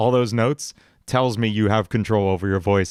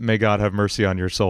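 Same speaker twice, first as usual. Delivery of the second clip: usual speaking voice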